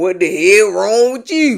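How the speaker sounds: a little put-on, light country accent. Recounting what Mike said when he walked in on a reality show, in a little country accent. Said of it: "I'm trying to do a little country accent".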